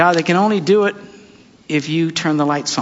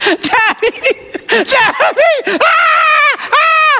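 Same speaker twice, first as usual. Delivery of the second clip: put-on acted child scream, much higher and slower; 4 dB louder than usual. Retelling his daughter screaming over a splinter in her finger, imitating a child screaming. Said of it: "And she's screaming, bloody murder".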